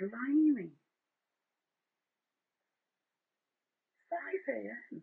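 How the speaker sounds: extreme shock, exclaimed. React to Kerry saying that it is 5 AM, in an ultra-shocked voice. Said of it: "saying it in that ultra shocked voice".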